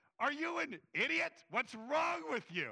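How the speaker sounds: loud, angry scolding yell. Re-listening to an old sermon they preached, the speaker retells yelling at the computer. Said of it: "I'm yelling at the computer".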